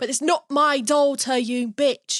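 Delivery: put-on thick, broad British accent. Demonstrating an accent being practiced, thicker and less posh. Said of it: "it's kind of got that thicker".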